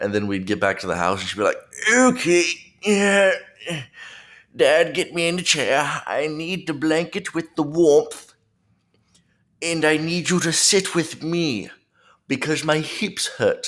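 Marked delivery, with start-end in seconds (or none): 1.9-13.7 put-on very high, drawn-out old woman voice. A dad voicing what she says once they get back to the house, put-on old-lady voice. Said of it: "I don't know why I gave her that voice".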